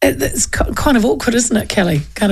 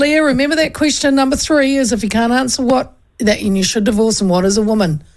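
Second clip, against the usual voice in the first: ordinary talk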